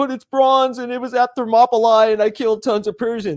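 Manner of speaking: touchy protesting tone. Acting out a hypothetical Spartan answering a mocking girl: imitating a defensive reply. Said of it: "get all defensive about it and be like".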